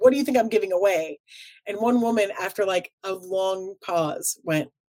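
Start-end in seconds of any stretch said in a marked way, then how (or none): 0.0-1.2 put-on shouting voice. Retelling a coworker holding a prize up in a crowd: imitating someone yelling. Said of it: "and he yelled".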